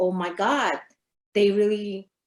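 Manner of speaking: plain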